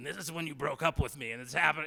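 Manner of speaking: eerie voice, said loud.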